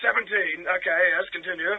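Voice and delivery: put-on posh voice. Calling in to a radio show as Gary: posh voice. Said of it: "it was a good posh voice".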